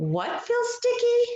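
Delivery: rising tune at the end on sticky. Showing listeners how a voice goes up when reading a question, rising question intonation. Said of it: "our voice goes up".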